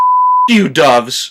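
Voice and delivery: low, grave, dead-serious delivery. Reviewing a comedy and quoting a line: imitating a deadpan serious delivery. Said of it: "in that such a serious manner".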